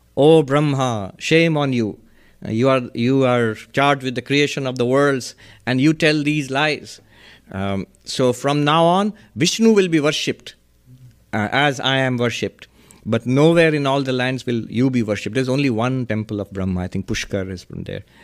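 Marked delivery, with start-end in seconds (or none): none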